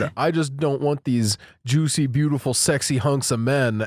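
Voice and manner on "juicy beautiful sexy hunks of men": ordinary talk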